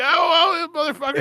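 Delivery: high, laughing, gloating tone.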